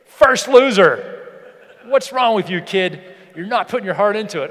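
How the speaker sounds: stern, harsh, unimpressed, scolding tough dad voice. Acting out a tough dad scolding his kid after a race: imitating a tough dad. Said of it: "My tough dad's there".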